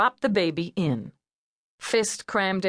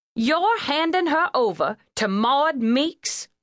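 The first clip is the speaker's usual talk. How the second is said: high, flat, incredulous huffing in disbelief; 7 semitones higher than usual. Told the baby niece will go to a relative, a woman gives an incredulous huff. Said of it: "Letty huffed incredulously".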